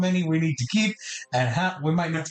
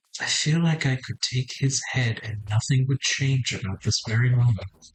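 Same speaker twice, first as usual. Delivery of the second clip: secretive stage whisper; 5 semitones lower than usual. Half-whispering in character to a companion, leaning over: half-whispering quietly. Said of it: "just whisper in Infernal".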